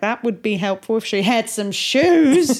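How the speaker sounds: awful, clumsy, put-on fake Australian accent. Quoting a man who keeps ruining the story, awful Australian accent. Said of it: "That was an awful Australian accent".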